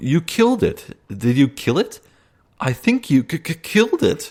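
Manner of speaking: squeaky high gnome voice, stuttering on "killed". A small gnome at a hut chatters at the visitor, high-pitched chattering gnome. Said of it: "begins to chatter in a high-pitched voice".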